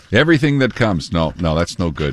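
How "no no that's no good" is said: usual speaking voice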